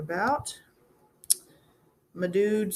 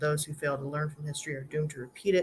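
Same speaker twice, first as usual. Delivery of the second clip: ordinary talk, nothing marked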